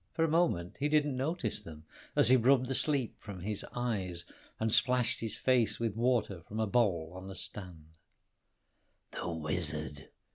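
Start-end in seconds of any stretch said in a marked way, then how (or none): 9.1-10.1 whispered, much lower pitch. Hassan whispers to Connor as a man wakes nearby: whispered. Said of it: "whispered Hassan".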